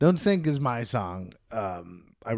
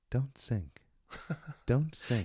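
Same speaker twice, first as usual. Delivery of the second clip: soft, slow, put-on matter-of-fact calm; 2 semitones higher, 7 dB quieter than usual. Doing an impression of the last thing you'd hear before dying: imitating a calm, matter-of-fact voice. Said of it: "so matter of factly. / I'm like doing a perfect impression".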